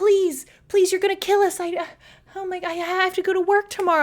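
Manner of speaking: mock dramatic panic, high, pleading. Retelling a mom gripping the car handle, imitating a dramatic panicking mom. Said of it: "that dramatic ass mom".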